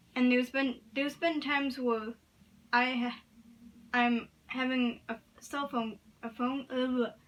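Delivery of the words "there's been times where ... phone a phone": stuttering, stammering speech. Telling about stuttering during phone conversations: stuttering. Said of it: "there we go with the stuttering".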